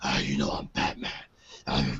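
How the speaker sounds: hushed, whispered voice.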